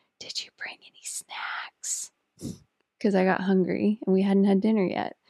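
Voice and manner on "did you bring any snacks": slow, very quiet, hushed, breathy whisper. Retelling a quiet night hunt, asking for snacks: imitating own past whisper. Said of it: "you hear me whispering".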